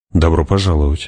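ordinary delivery

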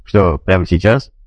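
ordinary delivery

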